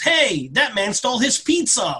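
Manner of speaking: mock alarmed, high, mild meme-style half-shout. Retelling a meme about a guy who screams: imitating a screaming man. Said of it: "the guy that screams".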